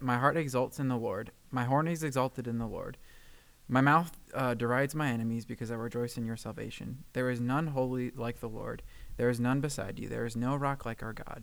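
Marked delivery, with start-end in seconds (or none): none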